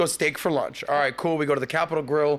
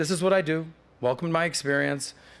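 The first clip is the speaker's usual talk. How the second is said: put-on calm, flat voice. Retelling a studio visit, imitating the host's greeting: stoic, calm tone. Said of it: "stoic, if you will".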